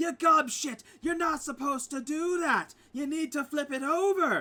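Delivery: shrill, very high, very loud furious yelling. Describing two dwarves arguing over metalwork, the speaker voices the woman yelling in rage. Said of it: "it's like rage like that back and forth".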